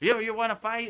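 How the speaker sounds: put-on small kid voice, high-pitched and taunting. Retelling a funny video where a small kid cusses out a man: imitating a kid cussing someone out. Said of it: "he's cussing him out, like".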